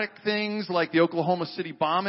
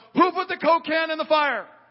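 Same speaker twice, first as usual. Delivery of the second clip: shrill, very high yell at the top of lungs; 10 semitones higher, 4 dB louder than usual. Retelling a camp story where a youth worker yells a question: retelling a loud yell. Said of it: "yells at the top of his lungs".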